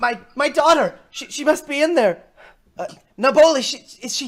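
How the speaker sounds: frantic, worried, high, loud pleading.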